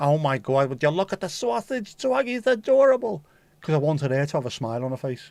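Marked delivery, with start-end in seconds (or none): 0.0-3.2 very loud, high Brooklyn woman's voice, shouting. A parent shows the voice used with a daughter in the morning; loud Brooklyn woman voice. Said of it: "shouting dead loud in a Brooklyn, a woman's Brooklyn voice".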